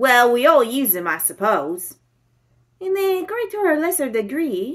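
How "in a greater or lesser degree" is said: murmured under the breath, pitched very high. Poirot answers the inspector, murmuring. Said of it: "murmured Poirot".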